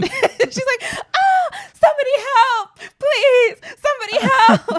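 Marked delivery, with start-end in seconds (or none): 1.1-4.8 very high, loud, wailing scream. Recapping a scene where Paige breaks her leg, imitating Paige's screaming. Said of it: "the way she's screaming is so funny".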